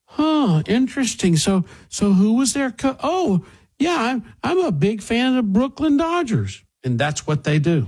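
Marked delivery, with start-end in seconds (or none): 0.2-6.6 put-on fascination, very high pitched. Retelling how people here react after ten minutes of dodgers talk: imitating locals faking dodgers fandom. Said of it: "everybody's going".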